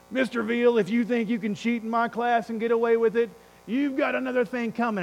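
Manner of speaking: put-on gruff, tough voice. Retelling what a teacher told the speaker in class, gruff, tough Mr. Richley voice. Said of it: "the gruff and tough voice of Mr".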